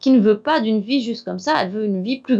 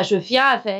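put-on accent from Alsace. Quoting grandmother, who followed him whenever he went out: strong Alsatian accent. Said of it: "avec son très très fort accent alsacien".

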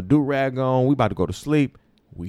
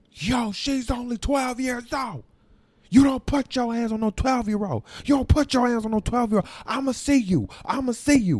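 play-acted, very high-pitched, threatening, angry yelling tirade; 10 semitones higher than usual. Retelling how a preteen's mom yelled at a lady with police there; imitating a mom yelling. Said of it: "Starts yelling at the lady".

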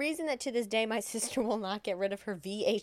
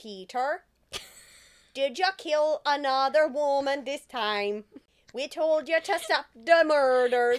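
put-on accent drifting Jamaican, higher and louder; 5 semitones higher, 7 dB louder than usual. Acting out a jailed young man's father scolding him: put-on voice sounding Jamaican. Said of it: "Now it sounds Jamaican".

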